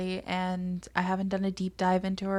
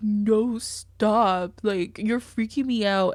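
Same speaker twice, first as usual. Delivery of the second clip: mocking, loud, slow and drawn out; 2 semitones higher, 6 dB louder than usual. Retelling what Natalie said while a woman was drowning: mocking imitation of Natalie. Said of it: "She's like".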